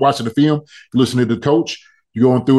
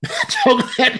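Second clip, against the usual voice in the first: high-pitched laughter through the words. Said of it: "I'm just laughing".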